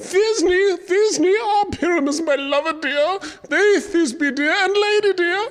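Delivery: tiny high voice. A player asks to also play Thisbe, speaking in a monstrous little voice. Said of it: "I'll speak in a monstrous little voice".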